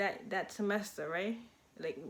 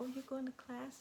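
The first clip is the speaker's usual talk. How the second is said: extra soft, hushed, gently flirty voice; 4 semitones higher, 8 dB quieter than usual. Retelling how she talked to her crush: imitating her own soft flirty voice. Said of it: "my voice just changed for him".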